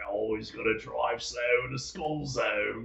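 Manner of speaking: put-on Scottish accent. Retelling a joke a comedian told, in the Scottish comedian's voice. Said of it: "I'm gonna say it in the uh, Scottish comedian's voice".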